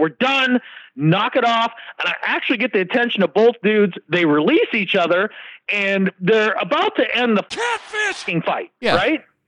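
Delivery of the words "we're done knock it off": put-on big voice, slower. Retelling stepping in to stop a street fight between two guys, in a big voice. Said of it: "big voice".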